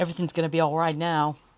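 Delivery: put-on American accent. Retelling a line from a movie, in a put-on American accent. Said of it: "That was indeed my best American accent".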